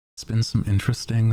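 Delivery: voice cracking. Livestream host talking about writing asmr, voice cracking mid-sentence. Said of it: "Sorry, voice crack".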